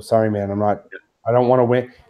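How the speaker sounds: ordinary talk, nothing marked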